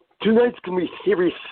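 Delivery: very high voice pushed through gapped teeth. Retelling a wrestling story, quoting Dynamite Kid, imitating Dynamite Kid through missing teeth. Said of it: "like he was talking through his opening in his teeth".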